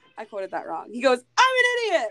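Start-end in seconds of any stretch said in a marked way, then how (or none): 1.4-2.1 shrill, very high, loud put-on yell. Retelling a character yelling into the abyss after Whoville, retelling a yell. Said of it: "he's yelling into the abyss".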